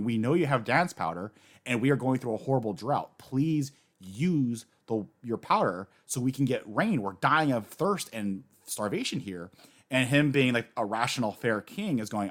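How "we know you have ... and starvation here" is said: plain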